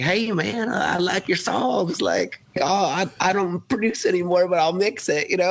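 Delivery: easygoing Texas twang, words stretched out. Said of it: "he's got this awesome like Texan drawl".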